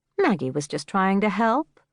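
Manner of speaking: ordinary delivery, nothing marked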